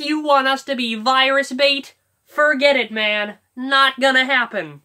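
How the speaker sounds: very loud, high, every word sharply enunciated. Demonstrate how he speaks his lines, in a very loud, really enunciated put-on voice. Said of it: "very loud, but like he really enunciates his words".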